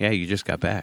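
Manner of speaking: put-on, deadpan, dead serious kid voice. Retelling what the kid said while staying deadpan: imitating a dead serious kid. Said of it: "he was dead fucking serious".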